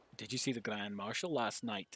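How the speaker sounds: deliberately put-on Scottish accent with a lilt. Reading a game question aloud to throw listeners off: scottish accent. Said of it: "intentionally doing the Scottish accent".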